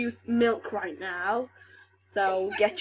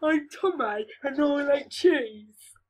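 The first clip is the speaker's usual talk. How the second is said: put-on dopey, dim-witted simpleton voice; 4 semitones higher than usual. Retelling how a boy mocked someone, in a mock dim-witted voice.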